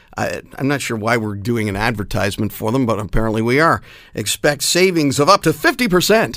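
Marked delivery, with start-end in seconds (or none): 4.2-6.4 pitchman salesman voice, reading like an advert. A radio host reads an advertisement on air, in a selling voice. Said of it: "I'm saying that in my selling voice".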